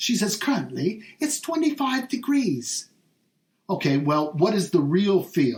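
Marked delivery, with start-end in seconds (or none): 0.4-2.9 put-on Australian voice-assistant accent, pitched higher. Retelling what the voice assistant answers about the temperature: Alexa in Australian accent. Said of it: "in her Australian accent".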